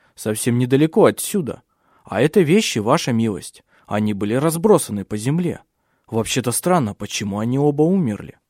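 ordinary delivery

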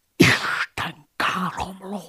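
horrified, aghast half-whisper, very high pitch. Narrator reads the abbot's first reaction to the narrator's words, aghast half-whisper. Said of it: "Suttogta elhűlve".

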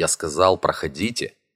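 ordinary delivery

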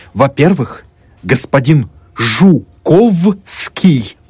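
indignant, flaring, offended outburst. Narrator reads a student answering a slur against Poles, flaring up indignantly. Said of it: "Студент вспыхнул".

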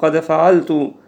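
normal talking voice

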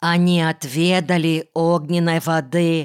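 usual speaking voice

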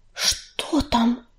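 faint with fear. As a companion suddenly stares behind her, she turns around faint with fear. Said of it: "обмирая от страха".

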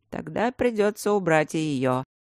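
ordinary talk

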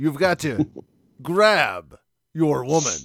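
stiff, stilted delivery like an old bad dub. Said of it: "He talks like this. And it's very stilted".

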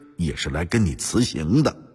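plain reading voice

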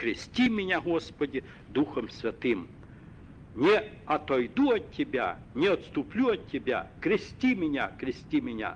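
ordinary talk

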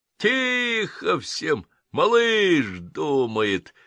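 bellowed laughing roar, high and drawn out. Narrator reads another one of the group calling out, bellowed with laughter. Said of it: "со смехом прорал еще один".

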